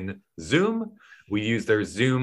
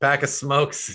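put-on thick, heavy Boston accent. Speaker retelling a chat with a man full of Bostonisms: thick Boston accent. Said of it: "he just had the thickest Boston accent".

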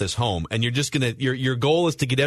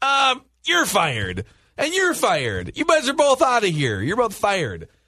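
high, swooping voice; 8 semitones higher than usual. Retelling a movie scene where the mayor fires two officers: imitating the mayor. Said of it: "the mayor just comes in and decides".

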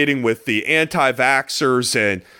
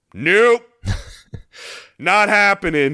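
blunt, matter-of-fact, dismissive tone, pitched up; 6 semitones higher than usual. Complaining about his tone, the speaker imitates Montez Sweat. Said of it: "the way he was saying it was like".

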